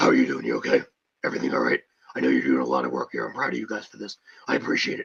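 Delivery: very low, gruff growl.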